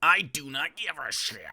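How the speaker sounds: slow, stagey, affected put-on delivery. Mocking the other speaker's claim that he doesn't care: imitating Dave's put-on voice. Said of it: "he can't even".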